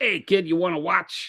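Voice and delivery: high, weaselly New Yorker voice. Voicing Admiral Trench after suggesting the voice: weaselly New York voice as Admiral Trench. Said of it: "like a Weasley, New York voice".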